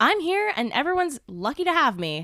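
bold confident voice. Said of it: "You just gotta say".

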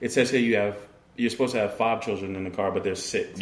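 ordinary talk, nothing marked

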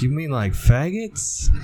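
put-on New York accent. Acting out a movie scene as it plays: Adam Sandler New York accent. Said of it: "he's like a New York accent in this movie".

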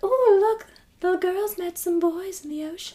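put-on sweet British grandma accent. Retelling what a grandmother said, imitating her cute British accent. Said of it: "she had this cute little accent".

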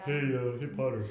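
big, shaggy puppet-creature voice. Retelling an editor's phone call, imitating Michael Haney like Snuffleupagus. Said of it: "he talks like Snuffleupagus".

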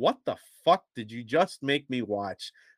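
normal talking voice

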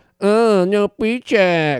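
put-on mocking voice. Retelling how a woman mocked her and Sarah, imitating a mocking voice. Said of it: "She mocked Sarah and I".

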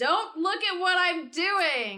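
slow, loud yell. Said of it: "as she yells to Ralph and Chaos".

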